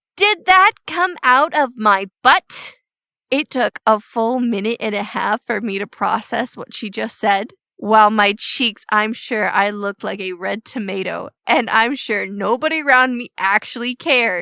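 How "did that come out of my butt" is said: put-on high small child voice sounding grown-up. Retelling her asking, after a fart in the store, in her big girl voice. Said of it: "in her big girl voice".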